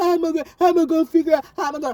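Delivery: put-on weepy wail. Mocking the idea of sitting at home crying: mock crying. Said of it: "just sitting in my house crying".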